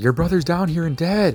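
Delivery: put-on yelling voice. Retelling a play's plot, a character yelling out news: imitating a character yelling. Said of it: "Marcius yells out".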